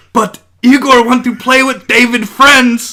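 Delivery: shrill, very high, loud shouted voice. Retelling a friend's staircase bit, answering as Igor: imitating Igor yelling. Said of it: "Igor yells back".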